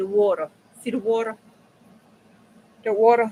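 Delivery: put-on northern US Yankee pronunciation of water. Commenting on water in a picture, imitating a Yankee accent. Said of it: "let me say it like them Yankees".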